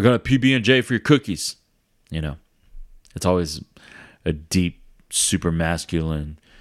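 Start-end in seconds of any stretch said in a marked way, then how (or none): 0.0-1.6 play-acted, high-pitched, yelled call. Recalling meal-time bartering, the speaker acts out someone calling out a trade; imitating someone yelling. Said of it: "they'll just yell it out".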